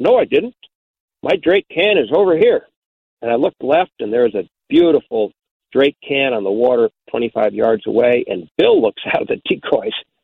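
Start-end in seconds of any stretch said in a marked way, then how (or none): 0.0-2.7 put-on upper Midwest Minnesota accent, pitched up. You're retelling how Bill Webster answered you in the decoys, in Bill Webster's Minnesota accent. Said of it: "Bill said in his Minnesota accent".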